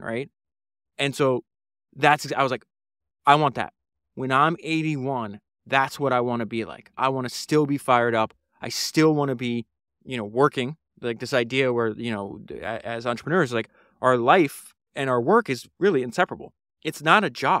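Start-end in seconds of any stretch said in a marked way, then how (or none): none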